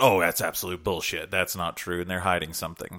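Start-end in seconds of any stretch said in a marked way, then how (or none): none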